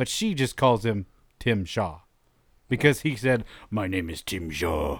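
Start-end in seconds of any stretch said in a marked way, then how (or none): 3.7-5.0 put-on very low, deep, very British accent. Retelling what a villain said when naming himself: very British accent. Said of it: "in a very British accent".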